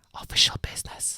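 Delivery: hushed, secretive whisper. First-person narrator quoting what they said to a young man, whispered. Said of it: "I said in whispered Bulgarian".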